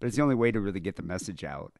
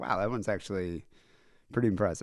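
normal talking voice

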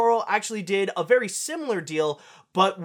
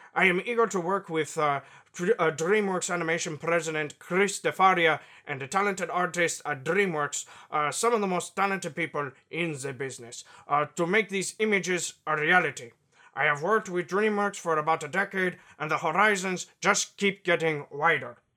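put-on Mexican-accented voice; 3 semitones lower, 3 dB quieter than usual. Reading a quote from a filmmaker aloud: Guillermo del Toro impression. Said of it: "my best, uh, Guillermo del Toro impression".

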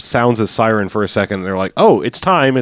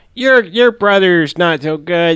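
put-on slow, higher-pitched kid voice; 7 semitones higher than usual. Retelling a movie scene, voicing a kid: imitating a kid from the movie. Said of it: "You're capturing these kids like you wouldn't believe".

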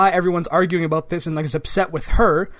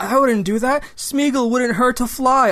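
sweet, gentle, calm, helpful, soothing voice, pitched up; 7 semitones higher than usual. Retelling a film scene where a creature denies blame: calm nice Smeagol voice. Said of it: "All nice and calm and, like, helpful".

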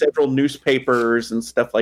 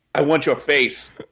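plain

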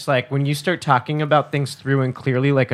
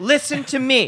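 mock angry insisting, higher pitch; 12 semitones higher than usual. Imitating how a partner acts when angry: imitating an angry partner. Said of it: "doesn't let the person get a word in".

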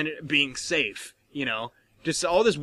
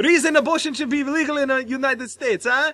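put-on nonchalant, tossed-off Russian accent; 10 semitones higher than usual. Retelling a comedy set, imitating Robin Williams' Russian accent. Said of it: "he's in character the whole time".

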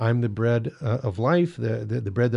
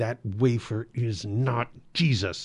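mock-furious voice, shaking and trembling; 3 dB quieter than usual. Recounting a call from an angry Baptist caller, the speaker quotes him: imitating a furious shaking voice. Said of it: "his voice was shaking. He was so mad".

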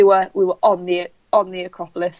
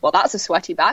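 ordinary talk

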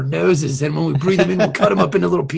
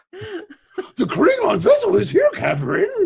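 very high cartoon dog voice, pitch swinging high and wide; 14 semitones higher than usual. Redoing a crew member's line to the captain, in a Scooby-Doo voice. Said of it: "Why are you Scooby-Doo?".

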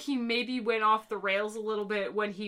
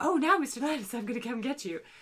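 weird, pompous, strangely feminine voice; 3 semitones higher than usual. Imitating an actor's odd line from a discussed episode: imitating Shatner's weird voice. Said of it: "His weird voice that he does".

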